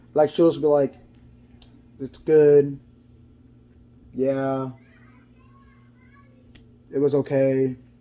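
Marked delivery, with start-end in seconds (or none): 2.0-7.8 mock dull, slow, bland, plainly unwilling tone. Retelling a coworker's replies at work: imitating Sarah's bland, unwilling tone. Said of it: "the tone of her voice sounded like she just hated to even speak to me".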